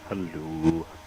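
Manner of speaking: very deep, very low voice. Showing Adam how to say hello properly: deep voice on hello. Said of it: "you've got to do it in a deep voice".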